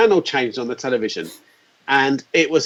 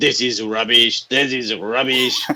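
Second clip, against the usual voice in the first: a little put-on French accent; 2 semitones lower than usual. Quote three hardened French journalists looking at stuff at a big electronic show, in a put-on French accent. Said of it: "Sorry for my little French accent there".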